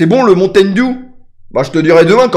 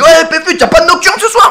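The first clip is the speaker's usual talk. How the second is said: put-on Belgian accent, very high pitched; 11 semitones higher than usual. Retelling what a caller said on the phone, belgian accent. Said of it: "Un accent belge".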